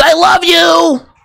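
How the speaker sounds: high, creaky character voice. Showing a voice that came to him: Donovan Beta voice. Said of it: "Like the Donovan Beta voice".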